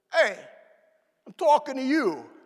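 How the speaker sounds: loud Brooklyn accent. Describing the moment God speaks to us, God in a Brooklyn accent. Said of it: "God says something in the Brooklyn accent".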